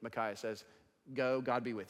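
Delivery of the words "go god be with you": put-on sarcastic tone. Retelling a reply to someone asking for the word: imitating a sarcastic reply. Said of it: "very sarcastically".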